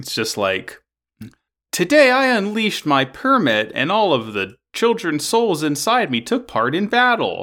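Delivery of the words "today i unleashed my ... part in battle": put-on, pitched-up computer voice-synthesizer voice. Imagining a cartoon's battle line read aloud: TikTok text-to-speech voice. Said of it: "you know that TikTok voice".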